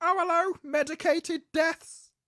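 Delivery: very high-pitched squirrel character voice. Quoting a line in the Dispy Squirrel voice: Dispy Squirrel voice. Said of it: "read this in the Dispy Squirrel voice".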